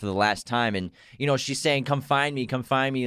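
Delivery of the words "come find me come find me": ordinary talk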